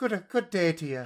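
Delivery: Belfast accent impression. Doing an accent for others to guess, Belfast accent. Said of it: "What does a Belfast person sound like?".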